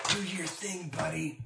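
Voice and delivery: soft, half-whispered aside. Playing his character, the speaker half-whispers to the character's cape. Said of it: "Dolus whispers to his cape".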